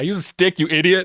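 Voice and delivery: angry yelling, high-pitched. A character retorts to the player's character, shouting. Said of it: "he just shouts like".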